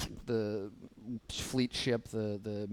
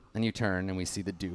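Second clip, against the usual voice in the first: ordinary talk, nothing marked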